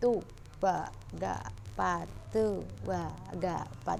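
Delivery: evenly spaced, paused counting in tempo.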